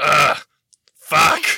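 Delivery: acted dying character voice. Asked to read a drawing's speech bubble aloud, in the Garrick voice. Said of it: "now you have to do it in the Garrick voice".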